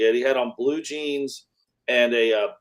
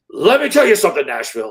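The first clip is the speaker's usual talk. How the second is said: put-on wild wrestler ranting voice, higher and louder; 5 semitones higher, 7 dB louder than usual. Retelling a wrestler's on-air promo once the microphones came on: imitating a crazy wrestling promo. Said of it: "goes into this diatribe of wrestling and just crazy".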